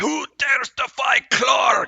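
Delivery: very loud, shrill, very high booming barked delivery. Game master voices a struck enemy rising over his wolf, barking out a challenge. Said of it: "He's gonna bark out".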